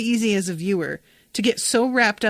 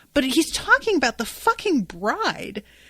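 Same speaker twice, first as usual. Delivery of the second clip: usual speaking voice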